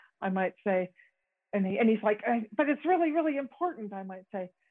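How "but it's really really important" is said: eager, excited, pressing insistence, pitched up. Speaker acting out Michael insisting during a conflict, imitating Michael's excited insistence. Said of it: "Michael is getting all excited about something".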